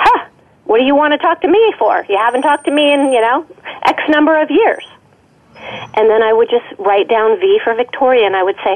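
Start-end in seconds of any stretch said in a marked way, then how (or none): 0.0-4.8 heavily sarcastic, mocking delivery. Retelling what the inner critic answered: imitating a sarcastic voice. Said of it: "this inner critic was very sarcastic".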